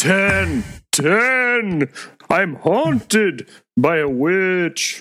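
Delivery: very slow odd drawl. Teasing another speaker by imitating how Larry talks. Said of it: "I don't know why you talk like that".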